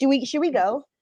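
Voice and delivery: anxious, flustered, panicky tone. Asking the other speaker whether they should go, starting to panic. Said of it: "I'm starting to panic".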